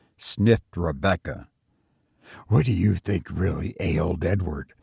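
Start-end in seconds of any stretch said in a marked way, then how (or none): 2.5-4.6 barely above a whisper. Emma asks her sister a question, barely above a whisper. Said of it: "Asked Emma in hardly more than a whisper".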